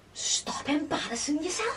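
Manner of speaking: put-on broad manly Scouse accent. Retelling a retort to lads shouting from a van: put-on broad manly scouse accent. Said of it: "put on me most filthy, scouse, manly accent".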